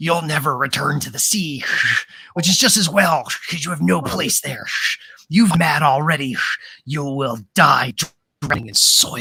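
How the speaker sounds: put-on voice of the wind. Voicing the wind as it speaks to a player's character: voicing the wind. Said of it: "when the wind said".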